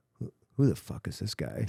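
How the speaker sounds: quiet whisper under the breath. Retelling a question to a companion about a stranger, imitating a whisper under breath. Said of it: "whisper to him under my breath".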